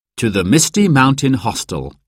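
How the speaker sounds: ordinary delivery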